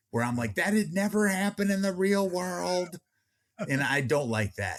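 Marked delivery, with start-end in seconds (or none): 0.5-3.0 acted-out, screaming, shouted complaining tone. Retelling own reaction to unrealistic film scenes: imitating own screaming at the screen. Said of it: "just screaming at the screen".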